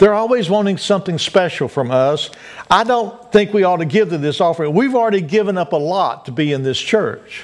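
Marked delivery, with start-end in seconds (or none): none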